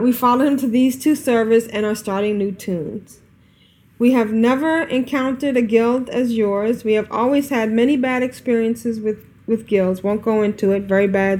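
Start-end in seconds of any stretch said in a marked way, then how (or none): none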